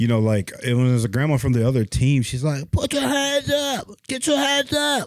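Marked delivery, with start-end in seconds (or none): 2.7-5.1 very high, shrill, raspy yell. Retelling how a grandma at a basketball game yelled at the kids: imitating a grandma yelling with a smoker's voice. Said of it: "She sounded like a smoker".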